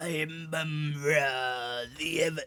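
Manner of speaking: high cartoon voice with one word drawn out. Putting on his cloak and announcing himself in character; Mumm-Ra voice sounding like Muscle Man. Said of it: "I sound like Muscle Man".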